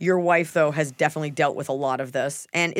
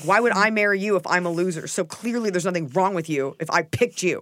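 put-on aggressive tone; 2 semitones higher than usual. Speaker acting out a hypothetical reply to a partner: mock-aggressive retort. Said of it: "I don't love that tone of voice".

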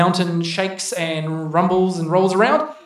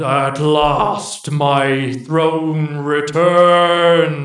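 very slow, echoing, deep, rumbling, drawn-out voice; 3 semitones lower than usual. As the spikes shoot skyward, a voice echoing all around claims its throne: deep rumbling voice. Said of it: "a deep rumbling voice echoes all around".

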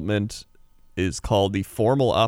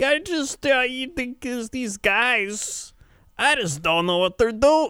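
put-on very high, meandering drunken babble. Retelling a late-night radio call from a caller: imitating a drunk caller. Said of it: "and he was just drunk".

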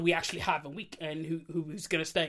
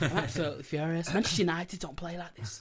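fake English football commentator voice. Showing the one line known in an accent: Gary Neville accent. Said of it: "Gary Neville's accent".

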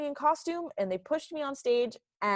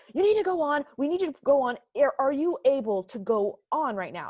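put-on, high, barked-out voice; 5 semitones higher, 4 dB louder than usual. Recalling the weekend after opening when they needed you to go on, act out their barking. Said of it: "they kind of barked at me".

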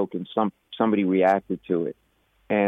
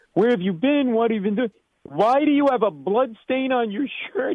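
very high, shrill screaming. Recounting the senior lawyer confronting the speaker at a meeting, mimicking screaming. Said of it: "He starts screaming".

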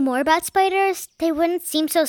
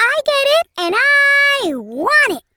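very high, tiny, squeaking little voice; 10 semitones higher, 5 dB louder than usual. Narrator reading a story, a tiny voice speaks up: tiny squeaky voice. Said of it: "A tiny voice squeaked".

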